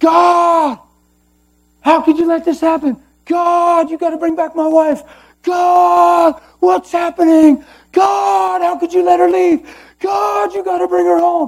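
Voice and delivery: very high, loud frantic scream, "God" stretched. Retelling what a man said to God, imitating him screaming at the top of his lungs. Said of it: "screaming to God at the top of my lungs".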